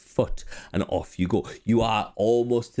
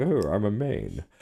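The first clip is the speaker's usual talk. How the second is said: put-on very posh accent, slow. Describing small demons, doing their very posh accent. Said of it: "they have a very posh accent".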